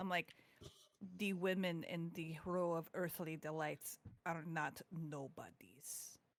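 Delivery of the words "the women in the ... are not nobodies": quiet, slow, menacing, threatening half-whisper. Pinning a man against a wall and leaning to his ear, a quiet menacing half-whisper. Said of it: "real quiet and menacingly".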